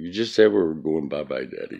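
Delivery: ordinary talk, nothing marked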